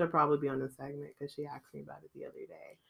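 sour, grudging, bitter, resentful tone. Mentioning that mom asked about the segment: bitter tone. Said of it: "Why do you have to sound so bitter".

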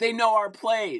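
mild half-yell, pitched high. Recounting a game, the speaker imitates him yelling at the other coaches. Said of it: "he's yelling at their coaches".

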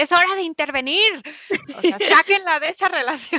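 full, high, shouted outburst. Retelling reacting to an abusive husband on a TV show: imitating her own shout. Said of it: "y gritaba así de".

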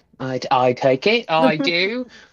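very slow, put-on Cockney accent. Playing a character in a game, slipping into the first tag. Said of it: "Catherine's turning Cockney there".

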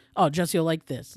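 ordinary talk

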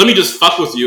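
ordinary talk

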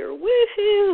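high, loud, excited, thrilled woohoo.

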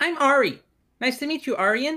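put-on little elf girl voice, girlish. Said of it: "She goes".

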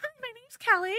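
very high, exaggerated, mocking put-on voice. Speaker retells her brother mimicking her ordering at a drive-thru, mocking high-pitched voice. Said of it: "put on like this high-pitched sound".

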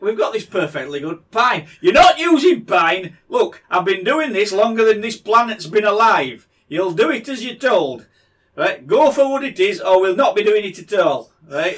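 put-on loud Yorkshire accent with a condescending, talking-down tone. Retelling the ark-building instructions as a Yorkshire dad, in a Yorkshire dad accent. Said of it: "You sounded like a Yorkshireman".

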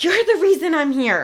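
really loud, upbeat voice. Retelling what a woman said as she turned to leave: imitating someone saying it loudly. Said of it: "really loudly goes".

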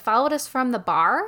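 usual speaking voice

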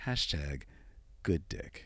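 slow, drawn-out, breathy whisper. Repeating a suggested hashtag when asked to: said slowly. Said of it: "Say that slowly".

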